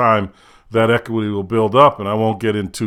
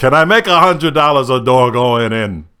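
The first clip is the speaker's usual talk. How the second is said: loud, bad put-on New York accent; 3 semitones higher, 5 dB louder than usual.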